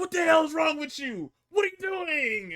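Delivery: play-acted, enraged, high-pitched angry scream. Retelling what Adam Pearce screamed on the show: imitating Adam Pearce screaming. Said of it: "Pearce is screaming".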